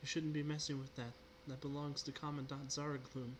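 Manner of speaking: gentle, soft, feminine woman's voice calling out. Narrator voicing someone calling out from the darkness: Miko's soft, feminine voice. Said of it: "soft, feminine voice calling out from the darkness".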